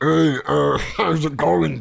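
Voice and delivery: very slow, grinding, rough orc-like voice. Showing Bob how he'd sound in his native tongue, like an orc eating rocks. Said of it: "sound like an orc eating rocks".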